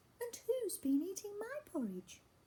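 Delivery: very high voice with swooping pitch. Narrator reading a story about the bears aloud, doing the Mummy Bear voice. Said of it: "in a Mummy Bear voice".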